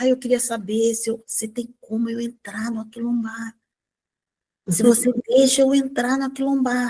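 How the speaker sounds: soft-spoken, hushed, nearly under breath. Retelling a woman asking to join Aquilombar: imitating someone speaking softly. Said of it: "Ela falando baixinho".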